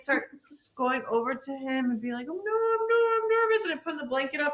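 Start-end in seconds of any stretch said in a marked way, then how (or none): 2.3-3.6 play-acted frightened, very high-pitched little voice. Retelling cuddling up during a scary movie: imitating own scared voice. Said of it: "and I'm getting scared".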